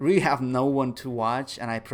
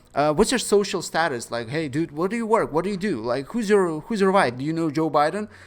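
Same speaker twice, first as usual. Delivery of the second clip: put-on rapid-fire delivery, higher and louder; 5 semitones higher, 5 dB louder than usual. Imitating silent streamers who cling to a visitor: imitating someone bombarding with questions. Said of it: "they fucking start bombarding you with questions".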